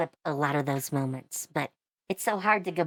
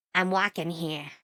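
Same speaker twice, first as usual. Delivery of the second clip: put-on Boston accent; 2 semitones higher than usual. Retelling a line from gameplay when a car drives over: Bostonian accent.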